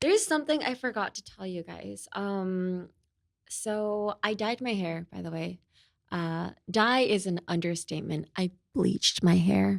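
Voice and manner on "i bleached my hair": hushed whisper. Confessing to viewers while a manager is nearby: whispering. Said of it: "I'm whispering it to you guys".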